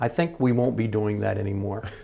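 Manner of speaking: very stern, firm, acted-out motherly voice. Retelling his mother's reply about the coal slide: imitating mother speaking sternly. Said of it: "very sternly".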